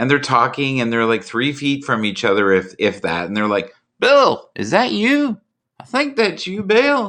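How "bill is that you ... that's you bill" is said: put-on very high, slow old-timer Southern drawl. Imitating people in their late seventies calling to each other, southern accent. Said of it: "I don't know why everybody's Southern when I do it".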